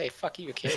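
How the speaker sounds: muttered whisper under breath. A character mutters at the one who just healed him, whispered under breath. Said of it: "he whispers under his breath".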